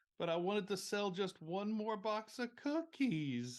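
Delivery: high, slow, fake tearful pleading. Acting out what Ember will say when told it's closed, fake tearful plea as Ember. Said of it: "big crocodile tears well up in her eyes".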